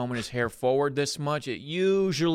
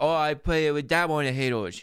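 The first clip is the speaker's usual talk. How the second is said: put-on lazy mumbling kid voice with a stuffed-up nose. Imitating Jake Paul as a little kid talking: speech impediment voice. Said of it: "talking like this. ... speech impairment".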